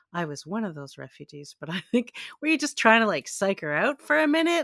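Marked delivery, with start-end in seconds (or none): 0.1-1.5 voice suddenly gentled into a soft hush. Retelling a woman's theatrical reveal right after she accused someone, imitating a softened voice. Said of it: "all of a sudden softens her voice".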